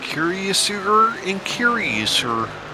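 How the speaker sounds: odd, theatrical, slow, high, drawn-out musing.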